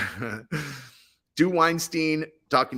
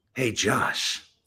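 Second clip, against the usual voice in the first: put-on predatory voice. Voicing a movie producer asked to do a voice, Harvey Weinstein voice. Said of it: "That's Harvey Weinstein".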